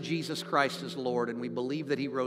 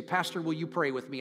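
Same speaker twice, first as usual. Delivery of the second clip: ordinary talk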